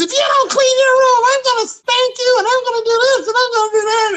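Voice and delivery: very high, nagging, scolding tone. Retelling a mother's threats to her sons: imitating mother's threats. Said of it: "my mother could give me and my brother all kinds of threats".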